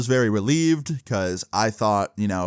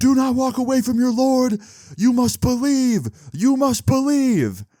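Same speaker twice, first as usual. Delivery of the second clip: put-on, very high-pitched, preacher-style hollering; 4 dB louder than usual. Retelling what a man at the bus stop yelled after them, imitating someone yelling. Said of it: "He yells".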